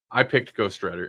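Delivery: ordinary delivery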